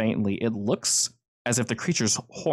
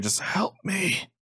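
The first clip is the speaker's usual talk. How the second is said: high, desperate, pleading whisper; 8 semitones higher than usual. Narrating a man in pain clinging to the listener, whispering in your ear. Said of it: "he's just like whispering in your ear".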